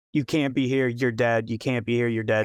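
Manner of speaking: ordinary talk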